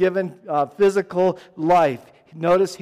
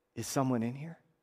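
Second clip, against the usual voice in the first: put-on sheepish, timid voice, much quieter and lower; 6 semitones lower, 15 dB quieter than usual. Retelling how a man in the bathroom asked who was there, mock-sheepish, very quiet. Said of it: "in a very quiet, sheepish tone".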